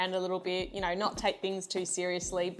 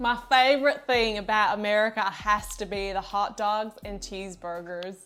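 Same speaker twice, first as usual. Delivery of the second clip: put-on, tried-out American accent; 4 dB louder than usual. Repeating a line someone asked for, in an American accent. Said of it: "say this in an American accent".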